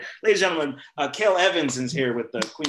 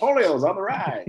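put-on old 1950s-style voice, much higher; 7 semitones higher, 4 dB louder than usual. Speaker quotes Kevin Chimko before introducing a special guest, in Kevin Chimko's old 50s voice. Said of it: "That's the old 50s voice guy".

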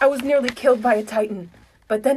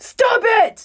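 very high, loud screamed outburst; 11 semitones higher, 5 dB louder than usual. Reading a story aloud as Eren silences the arguing crowd: Eren screaming. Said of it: "Then Eren screams out".

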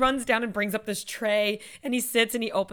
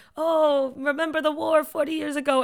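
bad put-on Dutch accent, pitched high; 5 semitones higher, 4 dB louder than usual. Retelling a sketch where an old couple talks: imitating a bad Dutch accent. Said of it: "they're trying to do Dutch accents".

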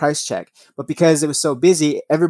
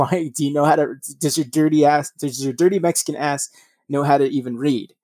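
ordinary talk

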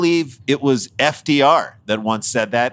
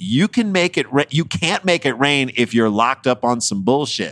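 usual speaking voice

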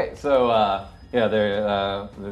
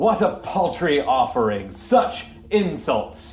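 booming, echoing, high-pitched, chamber-filling voice; 5 semitones higher, 3 dB louder than usual. Game master voices the voice echoing through the chamber after the players fail: booming echoing voice. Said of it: "you hear this booming loud voice that's echoing through the chamber".

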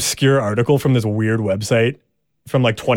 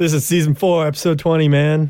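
put-on stoner-style voice; 4 semitones higher than usual. Recalling to a co-host what was said earlier, in a stoner voice. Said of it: "why I was like doing a stoner voice".

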